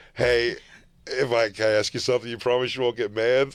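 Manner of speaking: normal talking voice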